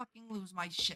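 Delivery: very angry, furious. Reacting in a game after a shulker blew up an end crystal: furious. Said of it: "I'm fucking pissed".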